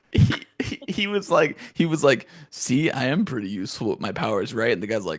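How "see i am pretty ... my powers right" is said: ordinary talk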